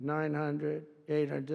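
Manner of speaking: put-on computer voice. Sitting with the pilots on a low approach, doing the computer voice. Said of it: "I call it the computer voice where it goes".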